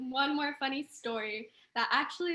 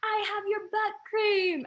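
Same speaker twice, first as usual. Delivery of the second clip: high, screeched, screamed-out call; 9 semitones higher, 5 dB louder than usual. Telling of a girl shouting from a bus window at people, the speaker is imitating someone screaming. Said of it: "starts like screaming at people".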